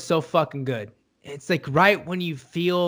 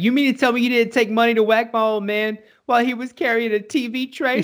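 put-on choked-up voice, higher pitch; 6 semitones higher than usual. Retelling a line Chrissy says while killing a man: Chrissy impression, choked up. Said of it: "getting so choked up about it".

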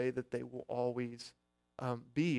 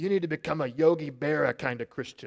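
loud, thick put-on New York accent; 2 semitones higher, 7 dB louder than usual. Retelling how Billy answered Ed, imitating Billy's thick New York accent. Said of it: "It's my New York accent".

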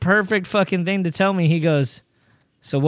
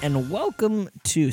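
distant from microphone, quieter; 5 dB quieter than usual. A podcast host opens the show, far from the mic. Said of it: "I'm a little far from the mic".

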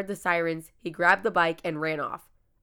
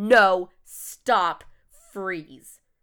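mock sudden, loud, urgent shouted yell; 5 dB louder than usual. Retelling warning off a stranger at the door: retelling a yell. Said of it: "I yelled".

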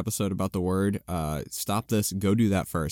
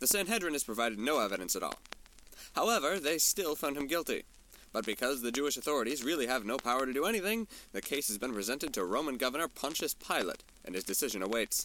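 soft, fast 1940s radio announcer voice. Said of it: "why I sound, uh, like nineteen forties radio".

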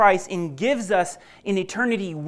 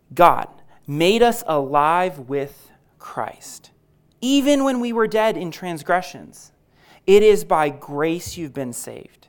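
very slow, unhurried, deliberate reading aloud; 3 semitones lower than usual. The speaker rereads verses 5 through 7 for listeners to reflect on, reading slowly. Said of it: "I'll read it slowly".

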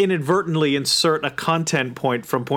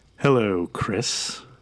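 low, sultry, vampy voice sinking lower; 5 semitones lower than usual. Greeting the co-host after being introduced as the sultry voice: sultry Joan Crawford voice. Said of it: "the sultry voice you're about to hear".

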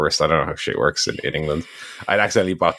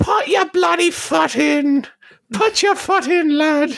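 put-on Manchester accent, much higher pitch; 4 dB louder than usual. Retelling what the football granny kept saying at the match: granny's Manc accent. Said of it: "this is in a Manc accent as well".

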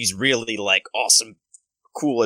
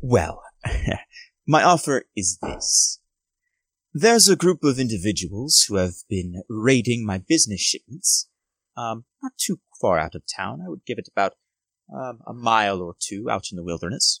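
very posh, opulent noble-sounding voice. Voicing a posh noble offering the party gold for a job: Lord Clarence Chadwick voice. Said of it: "really opulent, really posh".

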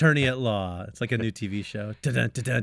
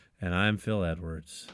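mock sad, flat delivery, lower and quieter; 5 semitones lower, 6 dB quieter than usual. Imitating another speaker's sad line: imitating Phil Edwards sounding sad. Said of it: "You sounded so sad to be Phil Edwards".

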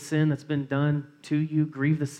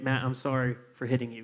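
fake flat robotic voice; 2 semitones lower, 4 dB quieter than usual. Retelling a brother's forced apology to him as a child: imitating Chris apologizing robotically. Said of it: "as robotic as you can".

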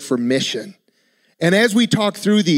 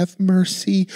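quiet, soft voice. Showing how the word mercy can sound weak: quiet voice. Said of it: "I almost wanna say it in a quiet voice".

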